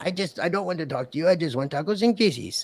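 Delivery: small, high-pitched talking little dog voice. Retelling how he would talk for his dog Lucy, do Jeff's little dog voice. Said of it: "get in his little dog voice".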